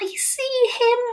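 trembling, quivering, very high-pitched half-whisper. Asked whether she sees a huge giant nearby, she answers, half-whispering back, quivering. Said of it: "Sophie whispered back".

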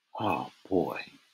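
very quiet, low, shaky, trembling voice. Narrator, looking at the crayon-colored spool pieces, in a low, shaky voice. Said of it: "I said in a low, shaky voice".

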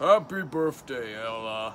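deep, low, fully menacing masked-villain voice. A student wishing Ella happy birthday: Darth Vader voice. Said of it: "in Darth Vader's voice".

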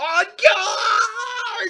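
very high-pitched, shrieking, shrill battle cry. Voicing the queen who grabs a sword: the queen shouting a challenge. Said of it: "The queen grabs the sword from the, from the decapitated mouse and goes".

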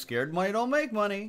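put-on sarcastic, taunting tone. Imitating a slot machine after a losing max bet: imitating a sarcastic smart-ass voice. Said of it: "a sarcastic, smart-ass voice being like".

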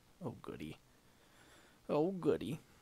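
light, high, sing-song, falsely delighted sarcasm. Player reacting to a setback in a card game, a little bit sarcastic. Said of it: "Sarcasm, a little bit of sarcasm".

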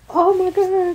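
shrill, very high, very loud screaming. Recounting getting scared on seeing Jason, retelling a scream. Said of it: "I'm screaming, hollering".

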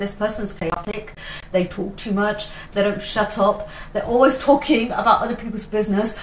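ordinary talk

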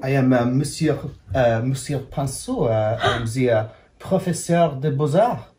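put-on French accent. Playing the art teacher character and introducing it, Monsieur Pinceau French accent. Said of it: "Is the French accent good?".

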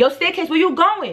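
acted, high-pitched yell calling out. Retelling a confrontation, calling after a girl: retelling own yell. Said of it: "I'm yelling".

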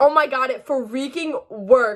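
thrilled, bubbling over with excitement. Seeing the homemade edible chapstick worked, so excited. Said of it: "I'm so excited right now".

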